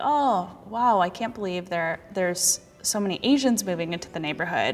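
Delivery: normal talking voice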